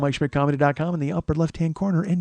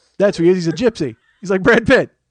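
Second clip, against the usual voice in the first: usual speaking voice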